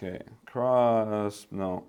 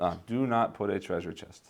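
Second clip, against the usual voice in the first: ordinary delivery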